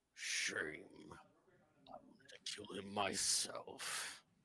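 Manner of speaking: deep, guttural, growling monster voice. Game master voicing a hoofed figure standing over a crushed body, deep guttural growling voice. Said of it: "in a deep, guttural, growling voice".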